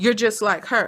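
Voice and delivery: put-on angry snapping outburst. Retelling how a mother snaps at her son: imitating someone snapping angrily. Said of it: "she snaps and she says".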